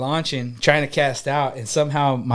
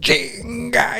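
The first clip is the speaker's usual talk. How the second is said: mock yelling, higher pitch; 11 semitones higher than usual. Retelling how a cousin reacted to being hit by bait: imitating a yelling cousin. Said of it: "He's yelling at me".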